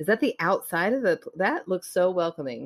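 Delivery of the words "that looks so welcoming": thick, heavily mocking sarcasm. Looking at spooky pictures together with another speaker: sarcastic tone. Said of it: "she's being very sarcastic".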